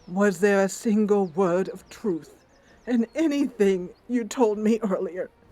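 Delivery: heartbroken, tearful, teary, betrayed-sounding voice. A druid confronts the one who betrayed her; tearful, betrayed. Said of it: "[name], recognizing that she has been betrayed, lets a tear slowly run down her cheek. / lets a tear slowly run down her cheek. / a druid".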